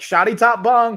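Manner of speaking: loud, slow, high call.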